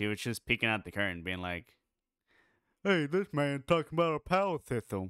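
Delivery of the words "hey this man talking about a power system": cartoonish character voice, lifted and pitched up. Voicing a figure peeking out the curtain: Patrick Star-like voice. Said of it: "make him sound like he was related to Patrick Star".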